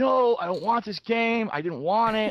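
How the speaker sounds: put-on high, irate, angry voice. Retelling a customer refusing a game at customer service, imitating an irate customer. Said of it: "the guy's getting irate".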